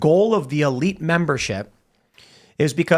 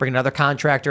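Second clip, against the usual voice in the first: ordinary talk, nothing marked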